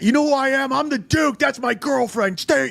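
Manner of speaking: very high, shrill, shrieking yell. Retelling what a man called the duke yelled at the bouncers: imitating someone screaming.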